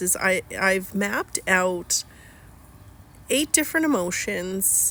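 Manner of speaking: slow speech with long pauses. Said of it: "I'm speaking slowly because".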